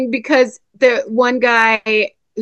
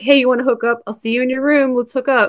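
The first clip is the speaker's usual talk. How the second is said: ordinary talk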